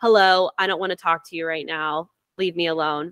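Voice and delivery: mock cold, short, flat, curt and unemotional. Retelling own reply to an unwanted visitor: retelling a flat, unemotional reply. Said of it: "Very unemotional, short to the point".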